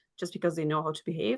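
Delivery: ordinary talk, nothing marked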